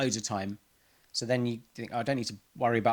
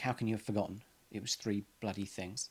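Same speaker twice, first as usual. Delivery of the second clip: soft, slightly stern, reproachful tone; 8 dB quieter than usual. Describing ringing home about a forgotten shopping item, the speaker acts out the reply: mock-stern voice. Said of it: "in a bit of a stern voice".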